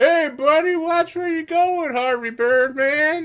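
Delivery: put-on shrill, very high, very loud drunken holler. Voicing a bystander who collides with a racer: drunk bystander's voice. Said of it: "drunkenly gets pushed out in front of the crowd".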